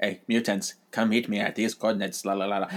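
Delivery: flat, monotone robotic voice. Speaker describing an X-Men story, acting out the leader's mind-controlled message: robot voice. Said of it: "He sounds like a robot".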